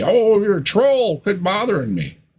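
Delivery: mock very high, bothered, swooping lash-out. Speaking to Patrick, acting out his predicted reply, mocking Patrick lashing out. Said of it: "you're going to lash out here and just say".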